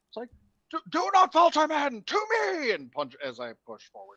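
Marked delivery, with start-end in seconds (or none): 0.9-2.7 very high, slow, poorly done rallying shout. A player rallies retreating troops in the game with a shouting Anton impression. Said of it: "best bullshit Anton impression as I shout".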